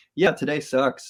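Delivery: ordinary talk, nothing marked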